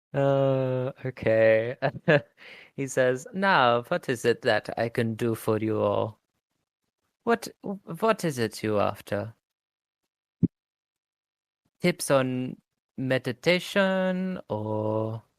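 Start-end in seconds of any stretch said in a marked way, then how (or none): 3.3-15.2 put-on German accent, warm and welcoming. Voicing a character who offers help, german accent. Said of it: "because he's got a German accent".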